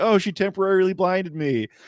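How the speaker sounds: high, screaming yell. Retelling a villain's line after being blinded in a game: imitating someone screaming. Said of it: "he turns around screaming".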